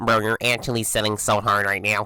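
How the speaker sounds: mocking, dorky nerdy put-on voice. Demonstrating an irritating tactic, repeating someone's words in a mocking nerdy voice. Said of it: "copying what someone says but doing it in a nerdy voice".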